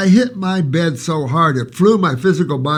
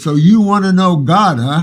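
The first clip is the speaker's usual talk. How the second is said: disembodied voice of an unseen presence; 4 dB louder than usual. Retelling what a voice said during a night vision: imitating a deep echoing voice. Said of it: "this deep voice echoed all through my beingness".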